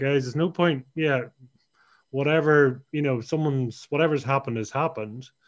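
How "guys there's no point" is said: plain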